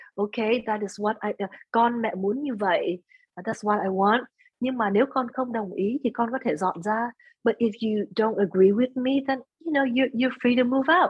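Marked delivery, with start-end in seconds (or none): none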